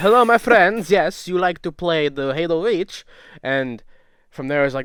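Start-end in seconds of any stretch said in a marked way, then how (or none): 0.0-3.0 pushed up high-pitched and loud. Retelling pranking players in game lobbies with a Borat impression. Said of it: "we would do Borat impressions".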